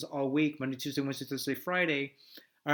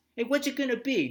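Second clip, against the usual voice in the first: put-on New York accent, very high-pitched; 10 semitones higher, 3 dB louder than usual. Speaker demonstrates how New Yorkers talk, New York accent. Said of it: "New York".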